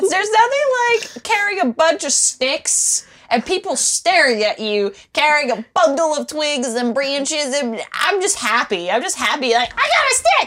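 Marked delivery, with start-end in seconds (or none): 9.7-10.5 high, loud, excited dog-like glee. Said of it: "I felt like a dog grabbing a bunch of sticks".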